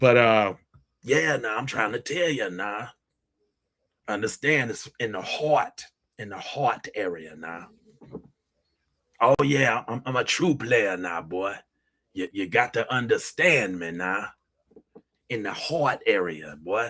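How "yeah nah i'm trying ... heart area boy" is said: put-on voice of an old dude. Thanking viewers while slipping into a put-on old dude voice. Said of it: "I turn into this old dude sometimes when I'm talking".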